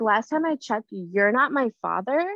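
ordinary delivery

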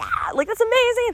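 high, excited mock scream, squealed with joy.

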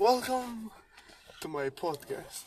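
very slow, drawn-out delivery. Retelling a line from a video: imitating the guy from the video. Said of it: "He was like".

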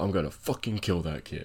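under-breath muttering. Retelling what a crew chief said at the clip's end, retelling an under-breath mutter. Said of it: "you could hear him under his breath go".

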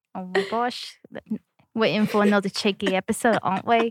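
Australian-sounding accent. Podcast host opening a new episode, slipping into an Australian-sounding accent. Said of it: "was that Australian?".

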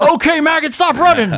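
loud hollering, pitched way up. Joking about celebrity voices for a running app: R. Lee Ermey voice. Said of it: "R. Lee Ermey would be the greatest celebrity voice ever".

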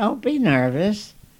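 high, squeaky little voice, squeaked out. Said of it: "she squeaks out".

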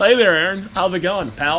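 ordinary delivery

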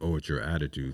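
ordinary delivery

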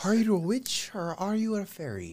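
high-pitched Irish accent. Asked by another speaker to say it in irish, speaker tries, in irish accent. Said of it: "get [name] to say it in Irish".

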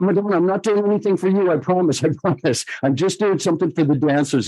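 apologetic, slightly frightened tone. Retelling their answer when she asked what they were doing, retelling a scared apology. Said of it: "really apologetically and kind of scared".

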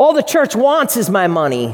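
cynical, sarcastic, swooping, complaining tone. Voicing a negative objection about giving money: imitating a cynical sarcastic remark. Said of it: "Cynicism, sarcasm, right?".

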